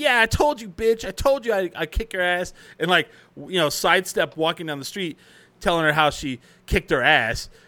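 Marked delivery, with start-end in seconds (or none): 0.0-2.5 mock hollering, pitched high. Retelling how a neighbor yelled at a girl on the street: retelling a neighbor's yell. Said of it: "yelling at her, like".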